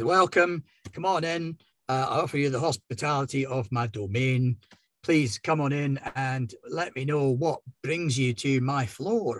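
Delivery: abhuman, welcoming host voice. Voicing the scarred abhuman greeting the group: voicing the abhuman at the counter. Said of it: "he kind of limps over to you from around the counter and says".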